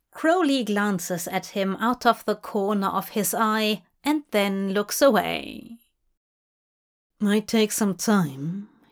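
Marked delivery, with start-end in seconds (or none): 7.2-8.7 mumbling, muttering. Asked whether they could find out together, he answers, mumbling. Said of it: "he mumbles".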